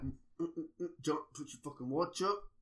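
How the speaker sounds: soft, fast mutter under the breath. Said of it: "I'm gonna be like".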